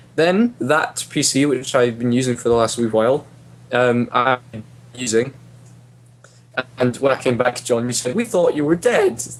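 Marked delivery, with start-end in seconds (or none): 8.2-9.2 voice breaking upward, cracking really high. Reminding John what he said when the speaker came back, voice going really high. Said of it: "my voice was really high again".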